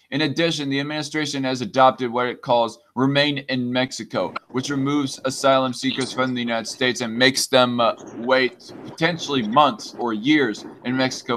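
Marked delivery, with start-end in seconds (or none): none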